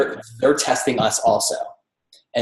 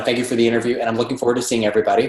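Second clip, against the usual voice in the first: very quick, rattled-off delivery. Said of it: "just really quick".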